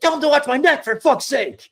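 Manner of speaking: acted-out, very high, shrill, enraged furious yell. Retelling how a man in the corner yelled at the ref, imitating someone yelling. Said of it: "It's El Grande yelling at the ref".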